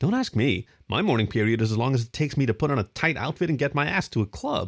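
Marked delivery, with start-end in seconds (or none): none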